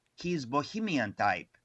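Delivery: put-on English spoken with a Greek accent. Retelling what his godmother said about a man: Effie Dragaras's Greek accent. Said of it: "said in her Greek accent".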